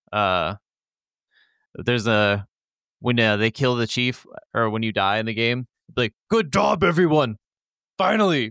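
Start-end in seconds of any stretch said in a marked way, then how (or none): 6.3-8.5 puppet-monster voice, much higher and louder. Quoting a brute's line from a game, Cookie Monster voice. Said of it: "Sound like the Cookie Monster".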